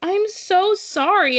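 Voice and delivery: put-on very high, tearful, crying voice. Retelling a customer's call about a broken mug: imitating someone crying. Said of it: "she was literally crying".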